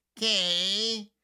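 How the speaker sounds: put-on K drawn out, high, whiny, like a bratty kid. Adding bite to the word 'k', said like a whiny kid. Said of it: "we're going to say it like a whiny kid".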